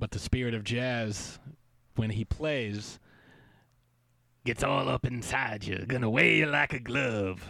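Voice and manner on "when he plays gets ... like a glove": low jazzy put-on voice. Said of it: "real low, and it's, like, jazzy".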